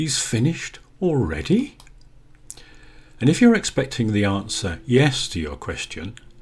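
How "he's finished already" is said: astonished, high swooping rising tone, leaning on "already". Teaching how to put surprise into a question, astonished, stress on already. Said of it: "You would put some astonishment into the word".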